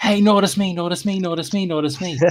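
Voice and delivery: put-on high-pitched voice like a small pestering child. Imagining a character acting like a child: Kosh acting like a child. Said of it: "reverted back to a child".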